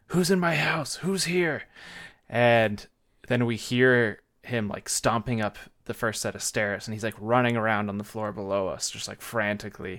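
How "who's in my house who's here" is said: play-acted, high-pitched screaming. Recounting loud banging downstairs, the speaker repeats a guy there: retelling a man screaming. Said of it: "this guy starts screaming like".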